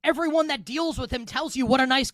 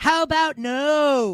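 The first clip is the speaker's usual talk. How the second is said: villain voice with a long drawn-out "no"; 2 semitones higher than usual. Asked whether the Steelers can win the Super Bowl, answering in a Doctor Evil voice. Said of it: "in my best Doctor Evil voice".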